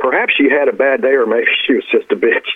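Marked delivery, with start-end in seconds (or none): none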